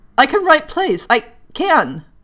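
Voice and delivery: high, loud, halting stammer in a panic. Panicked by the group's chorus of demands, Penny finally answers them, stammering. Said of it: "she stammered".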